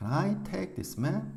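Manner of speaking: stress on I, take, map. English sentence reading lesson, Can I take this map: stress on I, take, map. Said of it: "I라는 주어와 take란 동사와 map 이 세 단어를 강하고 길게 읽고 can과 this는 약하고 빠르게 읽습니다".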